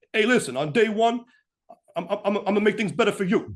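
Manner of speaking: put-on New Jersey accent. Imitating how he talks in his commercial: new jersey accent impression. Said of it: "he's got more of that accent".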